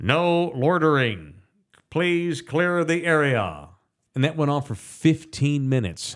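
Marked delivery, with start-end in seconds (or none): 0.0-3.7 slow, robotic, automated announcer voice. Retelling a loudspeaker heard at night: imitating a robotic ChatGPT loudspeaker voice. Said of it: "a Chat G P T voice or something that goes".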